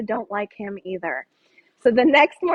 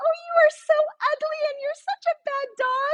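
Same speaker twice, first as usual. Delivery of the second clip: very high, sickly sweet, sugary voice. Demonstrating how they talk to their dog; sweet voice. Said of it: "in a sweet voice".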